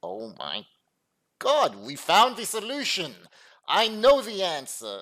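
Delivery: sarcastic fake excitement, loud with rising pitch. Reviewing a hand on the river, mocking a conclusion: sarcastic mock excitement. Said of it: "I'm being totally sarcastic".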